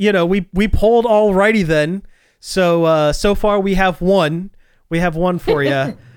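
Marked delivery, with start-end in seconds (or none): none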